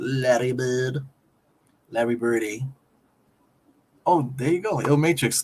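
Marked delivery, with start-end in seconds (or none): 0.0-2.6 slow, put-on Canadian accent. Showing how to say a name in canadian, in a canadian accent. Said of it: "How do you say it in Canadian?".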